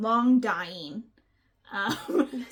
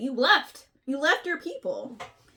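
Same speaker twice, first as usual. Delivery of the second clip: put-on, all-sass tone with attitude; 2 semitones higher than usual. Retelling a story scene, quoting her reproach: imitating a sassy character. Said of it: "She's sassy about this".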